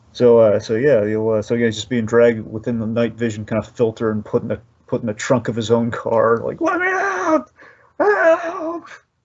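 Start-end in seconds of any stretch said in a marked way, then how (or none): 6.6-8.8 mock very high, very slow cry, "help" stretched. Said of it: "I love how his screams are".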